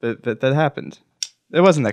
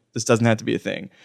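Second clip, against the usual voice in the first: plain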